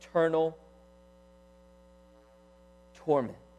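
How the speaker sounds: very slow, drawn-out, word by word. Speaker addressing brothers and sisters, repeating a phrase, said slowly. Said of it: "I say it slowly".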